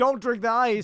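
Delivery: acted-out mock panicked screaming and yelling. Acting out how the other person would react to the speaker cleaning it, retelling a panicked scream. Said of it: "you start screaming".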